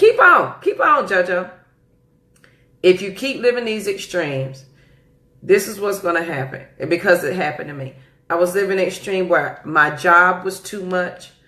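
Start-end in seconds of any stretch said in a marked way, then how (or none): 0.0-1.5 slow, swooping, drawn-out motherly tone. Warning listeners about living extremes, sounding like mama. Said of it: "I sound like my mama right there".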